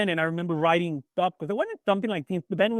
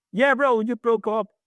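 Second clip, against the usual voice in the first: acted, teasing, mocking, laughing, pitched up; 5 semitones higher, 3 dB louder than usual. Retelling a joking reply to the band members: imitating a laughing, mocking reply. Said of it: "I'm making fun of it, like, laughing".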